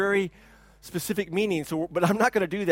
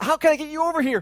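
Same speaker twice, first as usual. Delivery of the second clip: screamed at high pitch; 10 semitones higher, 4 dB louder than usual. Retelling how a man screamed at busy fishermen to come over, retelling a scream. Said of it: "Taylor was screaming at them".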